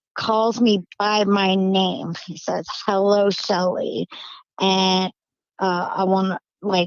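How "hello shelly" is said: put-on gravelly, staticky, evil demonic voice. Retelling what an unseen voice said: gravelly, staticky evil voice. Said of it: "the voice sounded gravelly".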